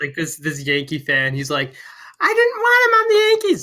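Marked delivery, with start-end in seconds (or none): 2.2-3.6 put-on upset kid screaming, very high, shrill, fast. Impersonating a Yankee fan from a video you saw, imitating a screaming kid. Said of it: "This is an accurate fucking impersonation of this kid".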